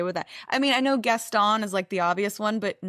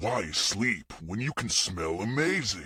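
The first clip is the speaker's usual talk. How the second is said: horror slasher villain voice; 13 semitones lower, 5 dB quieter than usual. [name] records a take for a sponsor's horror-themed commercial in a Freddy voice. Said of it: "doing his very best Freddie".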